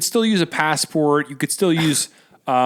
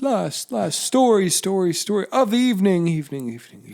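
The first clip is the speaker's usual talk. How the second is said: each word echoed back, pitched up; 5 semitones higher than usual. Showing a co-host the echo wanted on the announcement: mimicking an echo. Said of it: "Could you make my voice echo like".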